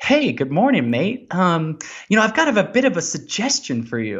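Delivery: bright, lilting put-on cheer. Retelling how Lou walked up and greeted you when you caught up, imitating Lou all chipper. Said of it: "He's like all chipper".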